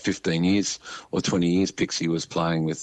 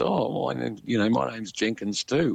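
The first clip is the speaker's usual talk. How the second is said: put-on cracking teenage voice, high and creaky; 5 semitones higher than usual. A speaker retells a young boy coming up to introduce himself, broken teenage voice. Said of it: "said in a broken sort of teenage voice".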